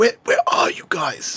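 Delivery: whisper, projected as if calling from a distance. A player's character calls to the others from a distance; whispering. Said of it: "is going to whisper again and say".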